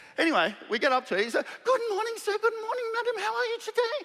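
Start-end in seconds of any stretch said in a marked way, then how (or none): 1.7-4.1 bright, very high, cheery voice. Retelling how a very happy man greeted them: imitating a cheerful doorman. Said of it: "he didn't sound exactly like that, but sort of".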